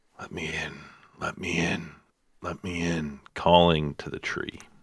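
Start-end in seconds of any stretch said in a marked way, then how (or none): 0.2-3.2 mumbling under breath. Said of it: "he begins just kind of muttering".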